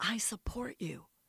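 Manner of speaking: soft, confiding whisper, barely above breath. Retelling what a woman once said to the speaker, retelling a whisper. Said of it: "She said to me in a whisper".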